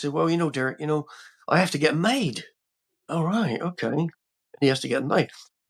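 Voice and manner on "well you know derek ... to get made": put-on accent from Bristol. Retelling what a man said to Derek: Bristol accent. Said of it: "he said in his like, uh, Bristol accent".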